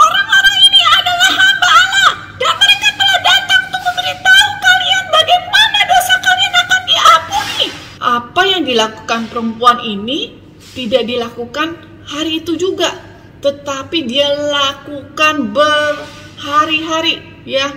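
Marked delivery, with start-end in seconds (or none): 0.0-7.7 very high-pitched, hurried, rushed shouting. Telling a story to young listeners, acting out how the woman shouted: retelling a woman's shouting. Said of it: "Dia teriaknya seperti ini".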